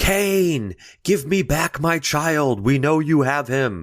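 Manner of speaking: mock high scream with one word drawn out. Retelling a film scene of townspeople at a church: imitating someone screaming. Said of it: "they start screaming at the church".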